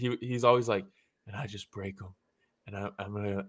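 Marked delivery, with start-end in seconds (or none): 1.3-3.5 very quiet, low, hushed ghost-story murmur, barely audible. Imitating a fighter promoting fights: Usman's ghost-story voice. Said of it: "he talks like he's, uh, telling ghost stories".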